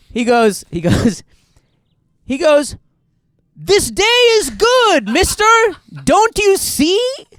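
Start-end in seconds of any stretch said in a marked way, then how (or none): 3.5-7.0 put-on, gusto-filled, very high, loud, rising, confident voice. Retelling a friend's clumsy line to a driver: imitating a loud, confident delivery. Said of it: "said it with such confidence and with the volume".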